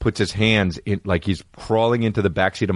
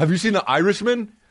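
mock shrill, very high-pitched, loud voice; 12 semitones higher than usual. Describing how Derek Yee kept asking about a movie, imitating Derek Yee being loud. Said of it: "He was so loud".

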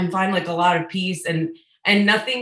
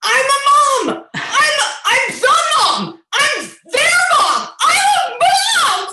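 very high, slowed shout with words stretched; 7 dB louder than usual. Retelling a moment in therapy, imitating her own shouting. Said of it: "all of a sudden just started shouting".

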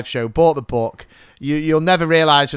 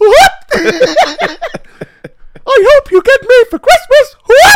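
squeaky, high cartoon mouse voice; 11 dB louder than usual. Retelling doing a voice as Father Christmas for a kid: Mickey Mouse voice. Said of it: "a great impression of Mickey Mouse".

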